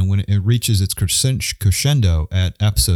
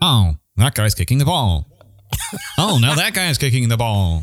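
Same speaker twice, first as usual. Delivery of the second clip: clumsy, mechanical, terrible put-on robot voice; 4 semitones higher than usual. Trying someone's accent though you feel you shouldn't: bad robotic impression. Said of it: "he's much more robotic".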